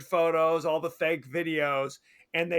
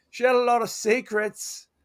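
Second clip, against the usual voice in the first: high, slow, drawled bad Australian accent; 6 semitones higher, 3 dB louder than usual. Describing a movie, the speaker quotes a classmate talking about her, in a bad Australian accent. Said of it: "not even Australian".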